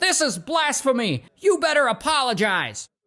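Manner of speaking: high, indignant, outraged outburst, righteous tone. Retelling a story, voicing the bishop rejecting the science: mock-indignant bishop. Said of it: "he ain't trying to hear all that science".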